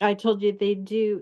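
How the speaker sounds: ordinary talk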